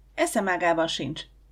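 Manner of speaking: usual speaking voice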